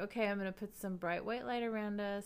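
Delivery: plain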